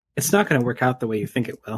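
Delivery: voiced stage whisper. Voicing a mysterious voice half-whispering to a player character: half-whispering voice. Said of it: "you hear a voice, like, whispering to you".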